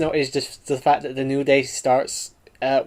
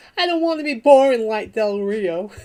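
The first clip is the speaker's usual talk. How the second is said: put-on, high-pitched little kid voice; 8 semitones higher than usual. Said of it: "started doing a high-pitched voice like a little kid".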